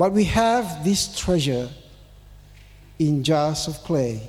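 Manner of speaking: slow, word-by-word reading. Reading a scripture verse aloud to listeners, reading slowly. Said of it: "I'm going to read it slowly".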